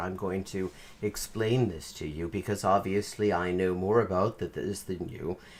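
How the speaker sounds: hushed, calm, low, carefully enunciated, authoritative. Demonstrating how to sound authoritative, low, enunciated authoritative voice. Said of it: "sound very calm like this ... this sort of lower voice tone because this makes it all sound very authoritative".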